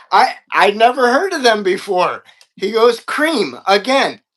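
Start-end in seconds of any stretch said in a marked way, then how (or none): none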